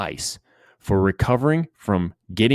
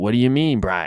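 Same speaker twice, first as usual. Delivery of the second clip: imitated, put-on Maine accent; 5 semitones higher, 3 dB louder than usual. Retelling his coach's reply to his apology: imitating coach's Maine accent. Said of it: "he talks in that that Maine accent".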